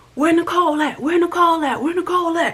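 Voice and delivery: very high, loud, shrill, aggressive yelling. Retelling a man storming into a building with guests, retelling his loud shouting. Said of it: "He come in louder than I don't know what".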